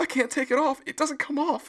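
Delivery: frantic, alarmed, panicked cry, very high. Retelling a tv scene where a girl can't remove a mask: imitating someone panicking. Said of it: "she's panicking".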